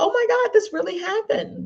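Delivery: very high anxious voice, swinging wildly in pitch. Explaining the power of pitch in a talk, showing a high anxious pitch. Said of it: "But if it's high, you may be a little bit anxious".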